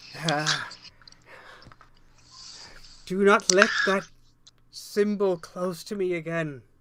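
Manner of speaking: whispered, hissing, smoky voice. Voicing a magic object that fears a symbol, in a whispering, hissing, smoky voice. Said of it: "that whispering, kind of hissing, smoky voice".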